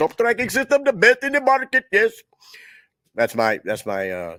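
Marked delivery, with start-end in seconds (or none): 0.0-2.1 very high, put-on Indian accent voice. Speaker promoting Top Tracking System, the name on his uniform: Indian accent impression. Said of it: "Indian impression".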